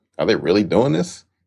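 ordinary talk

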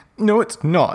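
very high-pitched, furious, angry shout. Narrator reading Ebony's reply to Vampire after her vision, shouted angrily. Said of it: "I shouted angrily".

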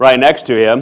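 booming, resonant preacher voice.

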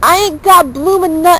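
attempted Australian accent. Trying out an accent while the others judge the attempt, attempted Australian accent. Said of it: "not only do I have to have an Australian accent".

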